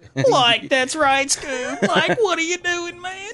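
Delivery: very high-pitched cartoon sidekick voice.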